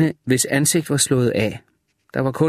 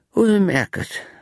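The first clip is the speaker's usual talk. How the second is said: sighed delivery, pitched up; 6 semitones higher than usual. Narrator reads a woman's short reply in a story, sighing. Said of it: "hun sukkede".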